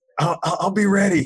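put-on excited speech. Retelling an excited reply in a new situation: imitating excited speech. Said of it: "Steve's all excited".

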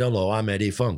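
put-on northern English Lancashire accent. Retelling how Eddie Funk introduced himself: Eddie Funk's Lancashire accent. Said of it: "he had that Lancashire accent".

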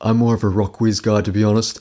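affected, put-on too-cool condescending tone. Confessing how he once answered a coworker, the speaker mimics his trying-to-be-cool tone. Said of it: "And I'd literally say it in that tone, basically trying to be cool".

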